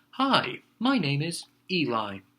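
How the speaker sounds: every word drawn out and swooping. Trying the character voice again, closer to how it sounded: Eli voice. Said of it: "More like that is what it sounded like".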